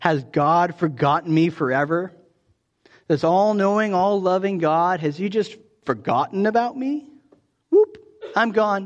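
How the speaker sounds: heavy, dripping sarcasm. Reading out the psalm writer's questions, imitating sarcastic questioning. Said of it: "There's this hint of sarcasm in those questions".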